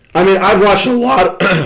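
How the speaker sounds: voice breaking mid-phrase. Jets fan talking about the game he attended, voice cracking. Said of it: "excuse my voice crack".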